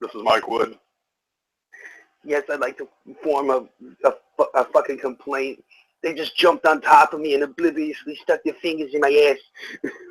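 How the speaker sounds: put-on elderly man's way of talking.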